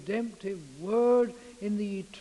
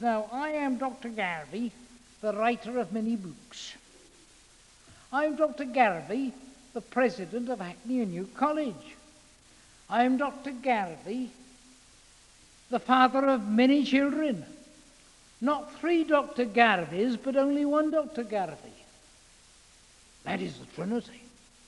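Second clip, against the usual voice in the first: bad mangled Scottish accent with Polish colour; 2 semitones higher than usual. Recalling a student lecture on the Trinity, imitating Dr. Garvey's awful accent. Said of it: "a Polish Scot with an awful accent".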